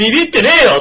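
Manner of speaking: loud, sharp reply tone. Retelling the husband's reply to his wife: imitating a loud retort. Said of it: "今日一度でかい声で言いましたよ".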